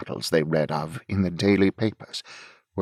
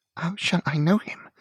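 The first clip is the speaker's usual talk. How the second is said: very high, thrilled, quivering trembling voice; 10 semitones higher than usual. Narrator reading Marco's question to Lauriston, voice almost shaking with thrill. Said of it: "Marco's voice almost shook with the thrill of his feeling".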